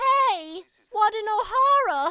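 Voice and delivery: cute, tiny, very high, loud little voice. Showing the character voice from an audition: cute Sal voice. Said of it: "So he's a little cute guy".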